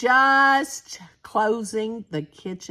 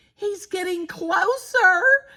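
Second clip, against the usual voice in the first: very high, squeaky little voice; 10 semitones higher than usual. Reading a children's story aloud, voicing Baby Bear: Baby Bear, squeak in voice. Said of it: "said Baby Bear with a squeak in his voice".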